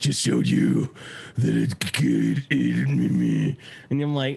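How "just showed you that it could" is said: put-on death metal growl. Retelling Batman's line at the end of The Dark Knight: Batman death metal voice. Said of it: "and he has to take a breath".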